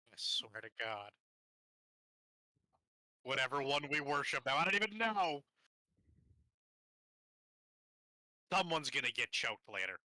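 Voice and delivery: openly hostile, aggressive, combative tone. Complaining about being covered in ooze: hostile. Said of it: "Need to be so hostile".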